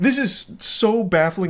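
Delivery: high voice breaking and cracking, baffled. Speaker reacts to a man's baffling behavior toward a woman, voice cracking. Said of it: "it's making my voice crack".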